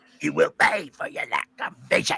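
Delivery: rough, croaking emperor voice. Reading a line aloud, doing an Emperor Palpatine voice. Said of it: "I have to do my best, uh, Emperor Palpatine voice".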